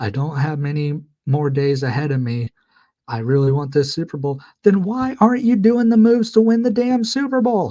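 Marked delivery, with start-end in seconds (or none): 0.0-4.4 put-on, mock tearful crying voice. Retelling how Jerry Jones spoke at training camp: imitating someone crying. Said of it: "crying, going like".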